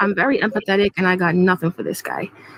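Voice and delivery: ordinary talk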